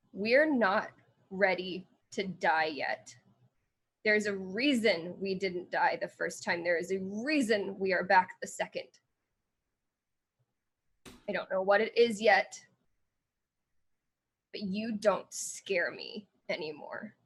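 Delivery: defiant, challenging tone. Playing a character confronting an illusion, defiant, glaring reply. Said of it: "they just glare back at Vera and say".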